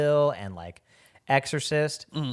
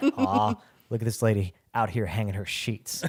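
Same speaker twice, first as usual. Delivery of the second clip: low, menacing ghost-demon voice; 5 semitones lower than usual. Retelling a movie scene from the ghost's side: voicing the ghost demon. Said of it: "from the, like, ghost demon's perspective".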